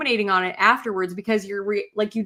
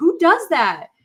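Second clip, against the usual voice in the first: mock heated, exasperated, high, raised mad outburst; 7 semitones higher, 6 dB louder than usual. Retelling how she and her cousin reacted to what someone did, retelling a mad outburst. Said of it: "my cousin and I were like so mad".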